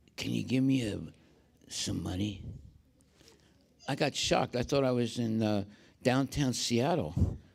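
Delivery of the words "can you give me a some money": rough, rusty, creaky, raspy voice. Retelling a panhandler asking for money: imitating a rusty voice. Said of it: "it was a rusty voice".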